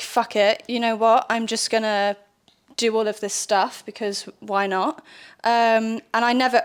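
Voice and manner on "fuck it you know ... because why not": ordinary talk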